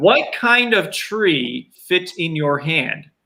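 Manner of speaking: deliberately slow, clear diction. Telling a joke to the audience, slowed down and enunciated. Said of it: "I will slow my my tone of voice down".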